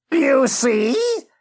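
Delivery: high-pitched, hissing monster voice. Reading a story aloud, voicing Retznum the monster with Retznum's hissing voice. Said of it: "he heard Retznum hiss".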